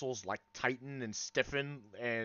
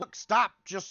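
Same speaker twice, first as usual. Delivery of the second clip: shouting in character voice, higher and louder; 8 semitones higher, 7 dB louder than usual. Voicing a character who yells at the players: yelling as an NPC. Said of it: "yelling at you".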